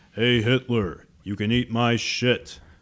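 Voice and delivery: deep bass action-hero voice. Acting out a time-travel bit about Hitler, in a Duke Nukem impression. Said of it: "that's a good Duke impression".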